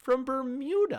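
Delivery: blurted out, high, loud and amazed.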